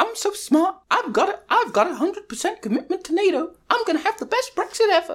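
very high, cartoonish housewife voice. Acting out what Theresa May thought after a meeting: Theresa May impression. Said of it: "now you've recast Theresa May as kind of like".

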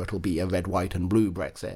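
ordinary talk

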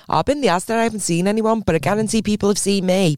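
normal talking voice

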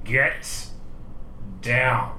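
forced out through clenched, gritted teeth. Narrating a bar scene as the character Neymar, through gritted teeth. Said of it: "through gritted teeth".

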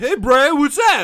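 put-on younger, middle-school-age voice. Retelling greeting a classmate at school: imitating own middle-school voice. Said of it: "that's what I sounded like in middle school".

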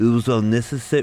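very poor, fake Midlands accent. Quoting a Villa legend's comment, in a very poor Midlands accent. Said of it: "me doing a very poor Midlands accent".

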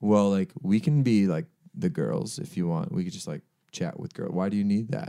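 put-on very dry, matter-of-fact deadpan delivery. Retelling a dry reply at a party: imitating a very dry delivery. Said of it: "Like, just very dry".

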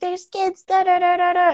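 very high, slow, drawn-out screaming. Retelling a woman who came and screamed at the speaker, imitating her screaming. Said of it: "came and started screaming at me".

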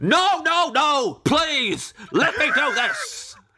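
very high, slow, eager, insistent delivery. Talking to David about always paying for meals, doing an impression of David insisting on paying. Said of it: "this is my impression of you".

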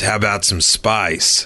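mock movie-style American accent. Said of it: "American movie accent".

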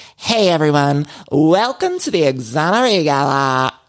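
put-on upbeat, chipper valley girl voice. Quoting a woman welcoming everyone to a gala, valley girl voice. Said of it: "it was very valley girl".

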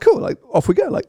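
light, carefree, breezy, very high-pitched. Retelling own reaction when setting the clock for a trip: imitating own breezy tone.

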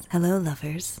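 seductive, sultry phone-sex-line voice. Asked to redo the greeting more sultry, saying it in a phone-sex-line voice. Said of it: "Now it sounded like a like phone sex line".

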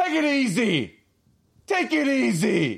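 very high, swooping called-out yell, "easy" stretched. Retelling how someone from the race course yelled at a driver, retelling a yell. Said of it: "I hear a hero from the race course yell".

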